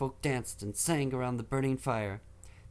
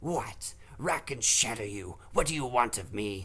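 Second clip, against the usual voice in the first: put-on hissing demon voice; 3 semitones lower than usual. Narrator reads the chained demon Encanus answering Telu, Encanus hissing, rasping. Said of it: "The demon looked worn and feral. / The demon looked worn and feral. His skin was sallow, and his bones pressed tight against his skin, but his power still lay around him like a dark mantle, hiding his".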